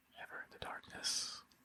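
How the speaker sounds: whispered, hushed, barely audible. Role-play player speaking in character at the back gate, whispering. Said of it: "I'm whispering".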